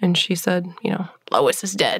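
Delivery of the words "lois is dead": put-on crackly little voice, lower pitch. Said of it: "this crackly little voice say".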